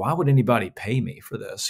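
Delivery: ordinary talk, nothing marked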